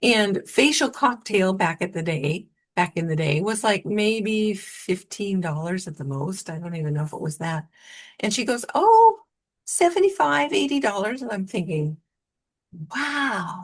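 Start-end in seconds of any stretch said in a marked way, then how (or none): 8.7-11.2 high, loud, funny little squeaky voice. Speaker retelling Virginia's reply to his question, imitating her squeaky voice. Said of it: "she had a funny little squeaky voice".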